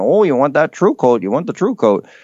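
high, quick, put-on Fargo Minnesota accent. Talking about Bill Gates and his Fargo impression, throw in lines as a Fargo impression. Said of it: "with his Fargo impression".

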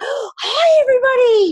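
out of breath, puffing, very high voice. Retelling walking on stage after a workout, imitating being out of breath. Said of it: "but I'm actually out of breath".

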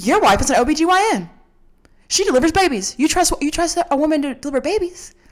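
imitated yell. Retelling a speech at church that scolded the crowd: imitating someone yelling. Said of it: "yelling at us pretty much".

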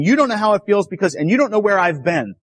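mild, restrained, toned-down yell. Retelling what the screaming man said about her: imitating someone yelling. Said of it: "he's yelling at her and saying".

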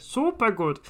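deliberate German accent. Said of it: "give us an opportunity to do the German accent".

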